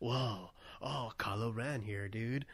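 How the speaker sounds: low, quiet, lazy, laid-back put-on voice. Joking about an actor playing an older Kylo Ren, the speaker does a horrible Keanu Reeves impression. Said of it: "horrible Keanu Reeves impression for both of us".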